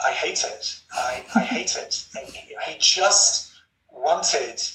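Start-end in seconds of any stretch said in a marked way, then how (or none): 0.0-2.1 slow, breathy, hushed whisper, barely voiced. Recounting a meeting, the speaker repeats what the man whispered to him: retelling his whisper. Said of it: "He whispered".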